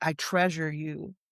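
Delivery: ordinary talk, nothing marked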